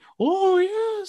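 terrible, bad spooky voice, pitched way up. Describing a wrestling segment, doing a terrible Paul Bearer impression. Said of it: "That was a terrible Paul Bearer".

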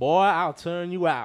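loud, high, put-on southern twang. Quoting what a woman said on mic, in a southern twang. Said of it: "she said in her southern twang".

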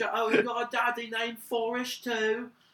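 put-on British accent, very high and loud. Showing off an impression, doing Forrest Gump in British accent. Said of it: "I can do a British person's impersonation of Forrest Gump really well without stuttering".

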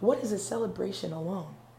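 ordinary talk

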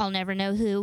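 ordinary talk, nothing marked

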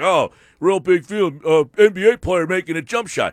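snide, sarcastic remark. Acting out how the text message might sound: mock sarcastic tone. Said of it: "You think he's being sarcastic".

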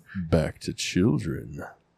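low, very slow creepy drawl. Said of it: "Don't say it like that".

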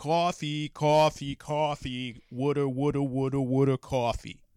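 put-on New Jersey accent. Told they don't have one, the speaker shows off a New Jersey accent. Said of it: "go back to my New Jersey accent".

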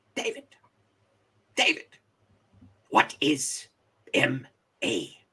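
put-on Ugandan accent. Imitate the man who looks down at David beside him on the step, in a thick Ugandan accent. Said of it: "in his thick Ugandan accent".

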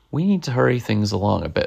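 ordinary talk

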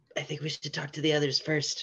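loud, audible whisper. In a role-play scene, one character whispers to another: loud whisper. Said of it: "You don't whisper very quietly".

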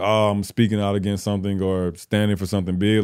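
normal talking voice

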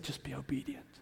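hushed, still, small, whispered voice. Retelling words heard while praying on his knees: retelling a whisper. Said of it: "in a still small s-, whispering voice".

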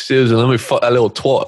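put-on Australian accent sliding into a British accent. Performing a line for listeners, in a put-on Australian-British accent. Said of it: "Did it start as like Australian and then it changed?".

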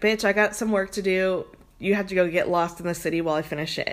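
ordinary delivery

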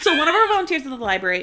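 rushed, rattled-off, very fast talking. Starting a story after being asked for one, talking really fast. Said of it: "I was talking really fast".

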